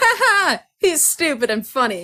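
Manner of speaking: high, loud mocking dismissive laugh. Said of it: "we're like".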